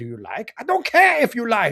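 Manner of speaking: terrible, loud, swooping fake German accent. Recalling a bizarre commercial, quoting its German man in a bad German accent. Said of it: "That German guy has a terrible German accent too".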